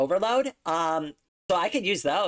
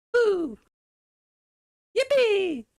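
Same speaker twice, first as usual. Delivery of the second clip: goofy video-game whoop, very high; 3 dB louder than usual. Trying out a best impression, cheering: Mario impression. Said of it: "That's my best Mario impression".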